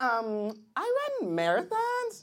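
put-on lilting young woman voice.

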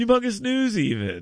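animated lion character voice. Recalling a Hanna-Barbera character while chatting with a co-host, Snagglepuss impression. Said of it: "That's not a bad impression".

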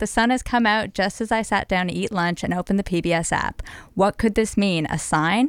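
ordinary talk, nothing marked

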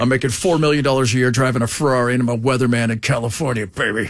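very low, deep TV weatherman voice. Mocking a weatherman bragging about his pay: imitating Dallas Raines. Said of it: "Dallas looked like he stepped straight out".

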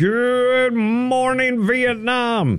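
very high-pitched, with "good" drawn out. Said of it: "Robin Williams".

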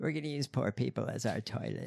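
spot-on heavy creaky vocal fry with creaky ending. Imitating the woman from the clip, vocal fry voice. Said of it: "it's not really an imitation. It's spot on".

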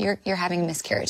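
speaking very softly. Speaker recounts what a man said to them; retelling words said very softly. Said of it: "he just said very softly".

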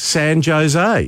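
Jose pronounced with J sound. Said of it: "we sort of pronounce our J's like a, an H".

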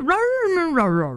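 high, sulky dog grumble, rah noises.

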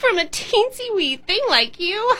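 very high-pitched, contemptuous sneer. Narrator reading Sharky Shark answering the tiny crab, sneering. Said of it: "she sneered".

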